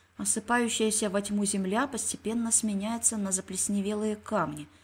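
ordinary delivery

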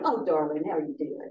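playful, goofy telephone voice. Recalling how Karen sounded calling on the phone, Karen's playful, silly voice. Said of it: "the most playful, silly voice".

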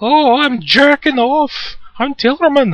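dreadful put-on Scottish accent, very high and loud. Playing a fantasy game and voicing a character; Tillerman in a bad Scottish accent. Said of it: "This is the worst Scottish accent in history".

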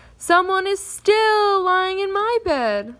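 shrill, squeaky, high, drawn-out cry. Finding a little girl asleep in his bed, he cried out in a squeaky voice. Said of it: "he cried out in his squeaky voice".

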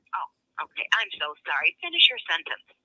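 insincere, sarcastic delivery with swooping pitch. An employee, scolded for interrupting, answers her boss, sarcastic. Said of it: "And can you do it without sarcasm?".

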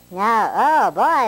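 very high, helium-lifted voice. Playing around with gases on camera, the speaker's voice turns high-pitched. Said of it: "my voice is really high this time".

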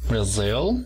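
Brazil with second syllable -zil lifted and stressed. Teaching country names, stress on second syllable of Brazil. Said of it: "Levantamos un poco en la segunda sílaba".

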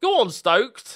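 excited, urging cheer, high, loud and slow.

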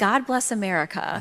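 ordinary talk

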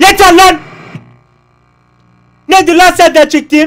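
yelling out. Playing a game and reacting aloud after getting hurt, shouting. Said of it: "Tepki olarak ben de bağırdım he".

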